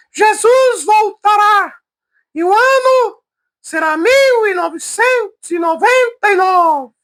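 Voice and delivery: very high, thin, slow little voice. Tell how a missionary used to preach, speaking in Miranda Leal's thin little voice. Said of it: "Ele tinha uma vozinha fina".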